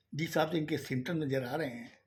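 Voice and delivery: ordinary talk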